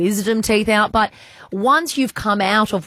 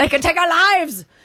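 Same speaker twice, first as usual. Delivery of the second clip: good strong Scottish accent, pitched up; 8 semitones higher than usual. Asked by the other speaker to show off an accent, Braveheart Scottish accent. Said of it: "Can you do a good Scottish accent?".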